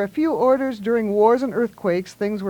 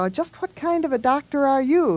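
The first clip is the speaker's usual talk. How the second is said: distrustful and wary, pitched up higher; 5 semitones higher than usual. Milo questions the doctor, suspiciously. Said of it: "he asked suspiciously".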